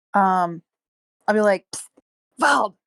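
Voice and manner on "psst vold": stage whisper, slightly high-pitched. Playing a character who calls to an ally mid-fight: stage whisper. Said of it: "stage whispering a bit".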